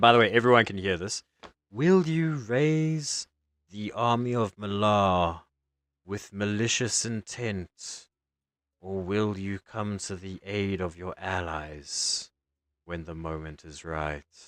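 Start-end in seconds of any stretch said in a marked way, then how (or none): 1.7-14.2 put-on feminine, womanly voice. A game master voices a scrying eye questioning a player, in a womanly voice. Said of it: "scrying eye in front of you, the arcana eye, / it's like a womanly voice".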